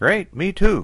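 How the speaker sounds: very high-pitched voice. Narrator reading a man's reply as he gets into the car: Kinnock Wilson's high voice. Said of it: "Kinnock Wilson said in his high voice".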